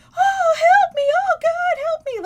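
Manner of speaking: eerie, shrill, very high and very loud cry. Describing a video of a corpse-like creature screaming for help, imitating a creature's cry for help. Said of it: "like this other timbre to their voice".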